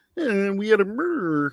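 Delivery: put-on puppet frog voice. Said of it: "what other voices can you do?".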